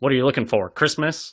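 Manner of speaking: rough, gravelly yell. Reading a comment aloud, retelling a grandmother's yell: gravelly Mae West voice yelling.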